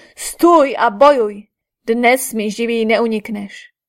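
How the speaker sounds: furious, grief-stricken roar. After an archer's arrow beheads another fighter, a warrior challenges the archer; roaring in grief and anger. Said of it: "se roztrásl zármutkem a hněvem a zařval".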